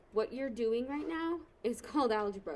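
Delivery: plain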